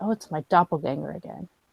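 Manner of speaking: muttering under breath. Speaking in character at a funeral when another character arrives: muttered under her breath. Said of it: "just under her breath, she'll just be like".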